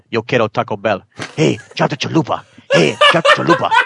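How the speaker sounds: bouncy character voice like a TV mascot. Quoting the ad slogan in a Taco Bell dog voice.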